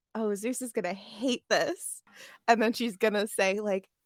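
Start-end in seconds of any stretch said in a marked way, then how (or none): 0.2-2.0 barely-there, sly, very quiet half-whispered aside. Playing a character half-whispering aside during an engagement: very quiet half-whisper. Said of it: "very quietly whisper".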